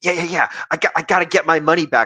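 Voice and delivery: tense, strained inflection. Imitating the other speaker's changed inflection about losing money: imitating a tense voice. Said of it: "you changed your voice inflection".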